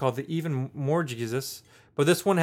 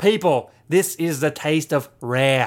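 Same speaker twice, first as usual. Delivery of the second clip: put-on Australian accent. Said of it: "it's gonna go Australian".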